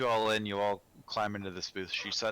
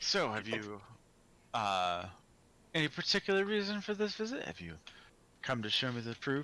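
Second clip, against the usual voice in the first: softer, quieter, kept-down and hushed voice; 3 semitones higher than usual. Voicing a character who asks about the visit: quieter voice. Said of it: "she says in, like, kind of a quieter voice".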